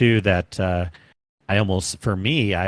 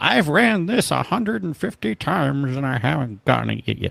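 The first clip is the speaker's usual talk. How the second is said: put-on creaky old man croak, pitched up; 7 semitones higher than usual. Acting out a story to tell people later, put-on old man voice. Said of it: "Why am I doing an old man voice?".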